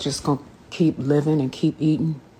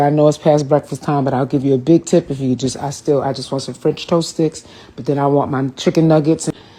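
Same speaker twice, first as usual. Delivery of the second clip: normal talking voice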